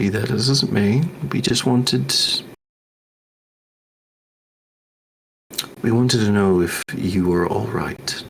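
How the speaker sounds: dropped voice. Character leans in to speak under the surrounding chatter, in a dropped voice. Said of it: "I'm gonna kind of drop my voice a little bit".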